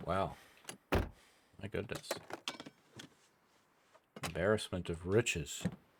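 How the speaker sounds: sarcastic whisper of mock wonder and awe. Reacting to finding a sewing book: sarcastic. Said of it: "I'm very sarcastic today".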